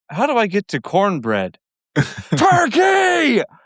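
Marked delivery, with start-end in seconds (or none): 2.0-3.5 very high, venomous, spitting, swooping voice. Retelling a story, the speaker acts out Roy's reply to a swearing driver, imitating Roy's venomous insult. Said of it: "he says turkey with so much venom".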